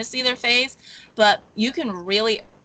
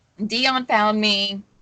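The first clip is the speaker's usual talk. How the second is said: ordinary talk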